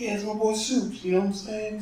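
put-on New York voice. Describing a restaurant owner who loves Superman, imitating him with a New York accent. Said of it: "Sounds like a New York kind of guy".

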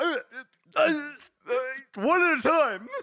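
swamped stammer, very high, loud, shrill, drawn-out. Imitating Nevis when it gets too much for him: imitating Nevis overwhelmed. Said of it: "He's like".

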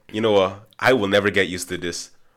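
normal talking voice

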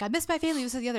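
mad, complaining outburst. Retelling a man complaining that he misses his family: imitating a mad man. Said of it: "he's mad and he's like".

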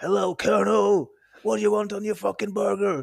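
very high, raw, rough scream. Recalling a man who was famous in the local scene, retelling a scream. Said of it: "han sto og skrek sånn der".

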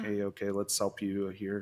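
ordinary delivery

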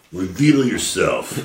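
really cool, kind of extreme delivery. A player commands a thing hidden under a tarp to show itself, really cool and extreme. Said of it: "say it really cool and kind of extreme".

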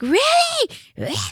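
shrill, very high, top-of-the-lungs yell. Retelling a cashier's reaction to being mocked: imitating yelling at full volume. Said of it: "Like yelling at the top of her lungs".

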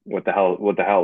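plain

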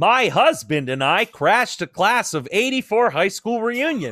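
loud, goofy, silly comedic put-on voice. Reading the next story aloud as asked, in a funny voice. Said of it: "Do the next one in a funny voice".

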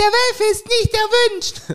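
very high-pitched voice. Recalling Simon's old signature line, the speaker imitates Simon's very high voice. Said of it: "So hoch war das".

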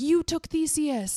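mock yelling. Retelling a show scene, someone runs toward the evil wizard: retelling a yell. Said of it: "yelling like".

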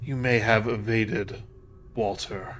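hoarse, scraping, rasping spectral voice. A malicious spirit levitating above the floor threatens its listener in a rasping spirit voice. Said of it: "it rasped".

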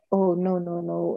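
very slow, hopeless, defeated, despairing lament. Describing someone who just sits there doubting: imitating a negative, defeated attitude. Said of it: "in that negative frame of mind".

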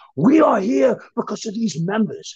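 play-acted livid, furious, high-pitched screaming. Retelling a meeting, quoting the boss screaming at everyone: imitating boss screaming furiously. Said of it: "He starts screaming at everyone".

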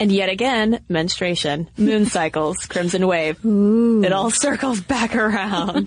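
tongue-in-cheek, insincere, sarcastic, mocking delivery. Host talking to listeners, sarcastic. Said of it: "I am being sarcastic".

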